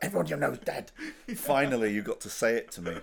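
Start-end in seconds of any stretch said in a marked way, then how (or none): 0.0-0.9 mock delighted, high, gleeful, relishing delivery. Quoting back to a co-speaker how they said it, mimicking their glee. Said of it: "the glee that you said that with".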